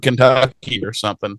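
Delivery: normal talking voice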